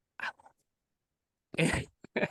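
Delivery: whispered, muttered delivery. Retelling what a customer said leaning into the camera: imitating someone under her breath. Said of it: "under her breath".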